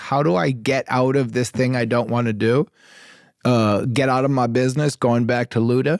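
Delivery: plain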